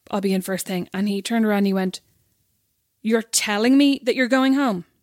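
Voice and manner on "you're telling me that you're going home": put-on, really loud, booming boss voice. Telling a story about a man who turned around to reply; imitating him really loud. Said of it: "Like really loud".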